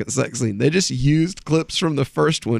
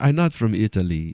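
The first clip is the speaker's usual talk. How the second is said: put-on generic European accent, much lower; 4 semitones lower than usual. Retelling a man's answer to people guessing his origin, in a generic European accent. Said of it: "He just has this accent".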